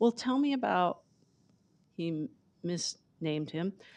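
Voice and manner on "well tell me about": put-on very sweet, high-pitched voice. Recounting a man asking him a question, imitating the sweetest voice. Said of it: "he asked me in the sweetest voice".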